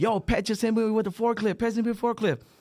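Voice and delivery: put-on very high shrill yelling. Retelling a coworker's complaint to the supervisor: imitating a coworker yelling. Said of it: "He started yelling at the supervisor".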